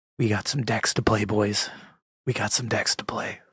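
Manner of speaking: hushed, whispered voice. A streamer talking to viewers while the roommate is asleep, whispering. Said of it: "I'm whispering because my roommate's asleep".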